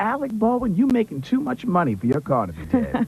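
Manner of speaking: very high, animated woman's voice with wildly swinging pitch.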